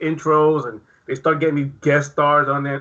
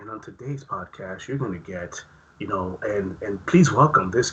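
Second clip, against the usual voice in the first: gentle, soft, low news-anchor voice; 6 semitones lower, 4 dB quieter than usual. Mocking how podcasts open their episodes: soft podcast-intro voice. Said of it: "The soft voices happening".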